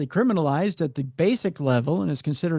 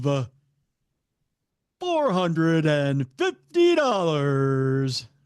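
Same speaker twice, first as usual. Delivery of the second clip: put-on game show announcer voice. Reading out a grocery total: Price is Right announcer voice. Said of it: "I can do the announcer voice from Price is Right".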